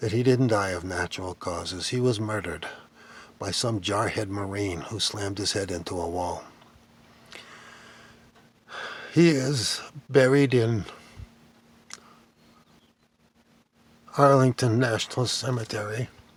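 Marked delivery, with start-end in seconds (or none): 1.9-16.1 choked-up voice, throat catching, choked with emotion. Tell the story you were given of how a man died, getting choked up. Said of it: "I'm getting choked up".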